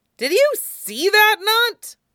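very high, drawn-out spluttering sputter. Narrator reading Sokka's line as Toph bends him out of the ground, sputtering. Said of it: "Sokka sputtered".

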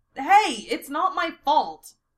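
protesting. Teased by the others, he answers back, protesting. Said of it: "Eren protests".

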